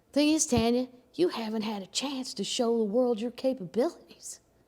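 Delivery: put-on folksy country twang, hard-selling delivery. Acting out a pitch to her, the speaker plays Steve with a put-on country accent. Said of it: "we'll just act like he's country".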